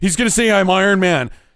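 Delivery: loud, blurted-out remark. Retelling what a moviegoer said during the film: imitating someone talking loudly.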